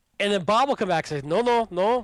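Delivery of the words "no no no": slow, bad, drawn-out Russian accent. Joking about a scammer haggling over bitcoins, as Bob in a terrible Russian accent. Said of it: "And terrible accent".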